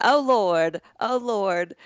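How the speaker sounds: put-on old lady voice with Southern accent. Retelling what someone said when a woman came in, old lady southern accent. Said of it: "she's doing this like old lady Southern accent".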